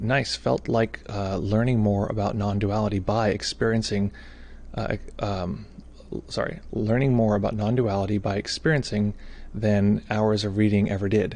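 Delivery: ordinary delivery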